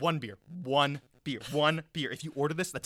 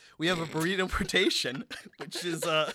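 speaking while laughing; 3 semitones higher than usual. Reading out a made-up menu, laughing while talking. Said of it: "I don't know why I'm laughing".

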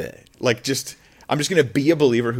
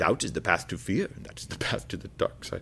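put-on breathy, whispered elderly man's voice with British accent; 3 semitones lower, 9 dB quieter than usual. Speaker talking about hope and trust, slipping into an old British man voice. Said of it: "I just lapsed into like an old British guy".

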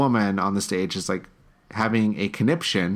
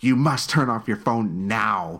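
mock-stern, imitated woman's voice. Retelling a woman in a theater telling someone to turn off their phone, imitating her stern tone. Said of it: "she was very stern with the words she was using".

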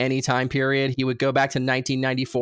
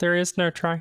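dorky little put-on alien voice, higher pitch; 5 semitones higher than usual. Imagining George Lucas playing the role, doing a Yoda voice. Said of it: "imagine George Lucas doing Yoda".

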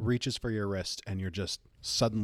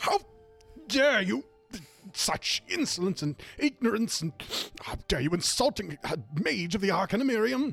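enraged, offended, furious outburst, very high-pitched; 11 semitones higher than usual. Voicing an offended young mage shouting at a trickster: furious young mage. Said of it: "completely red in the face".

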